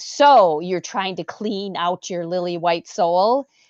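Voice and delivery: very sneering, scornful, contemptuous tone. Quoting a gentleman who responded to them, retelling a sneering remark. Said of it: "in a very, uh, sneering tone of voice".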